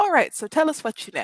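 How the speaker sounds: menacing, intimidating tone. Voicing a character sitting on dead bodies, asking for information: intimidating. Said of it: "That's intimidating as hell".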